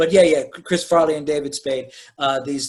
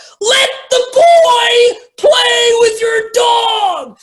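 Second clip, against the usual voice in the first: very high, very loud, very slow, drawn-out granny shriek; 10 dB louder than usual. Retelling a comedy sketch where a grandmother screams: imitating a grandmother screaming. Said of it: "his grandmother would scream".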